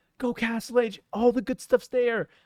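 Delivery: mock devilish whisper. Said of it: "The devil was telling me".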